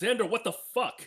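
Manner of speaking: very high, shrill, loud shrieking yell. Retelling how she yelled upstairs about the turkey: imitating someone yelling. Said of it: "she yells out".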